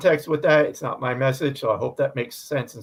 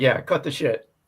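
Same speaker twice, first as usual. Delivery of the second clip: plain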